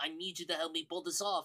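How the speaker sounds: put-on very heavy French accent. Reviewing an actor's role, the speaker quotes him with a heavy french accent. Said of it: "with a very heavy French accent going".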